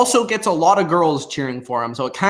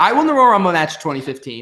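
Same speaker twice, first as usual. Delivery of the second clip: plain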